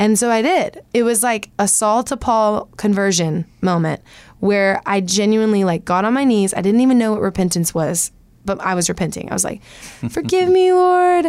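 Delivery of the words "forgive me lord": put-on childlike, emotional pleading voice, higher. Retelling own prayer of repentance on knees: retelling a childlike emotional prayer. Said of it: "Just very childlike, very, like, um, probably slightly emotional".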